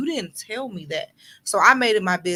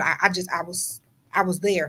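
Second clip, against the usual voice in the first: normal talking voice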